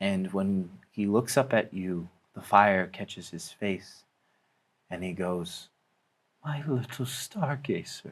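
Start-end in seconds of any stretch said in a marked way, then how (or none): 6.4-8.1 soft voice breaking and cracking on words. A narrator voices a hooded stranger looking up at the listener: voice cracking. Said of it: "His voice cracks".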